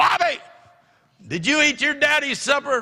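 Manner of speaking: very high, loud, shrill call-out. Retelling how a wife yelled at a son about supper: imitating someone yelling. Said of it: "and she yells".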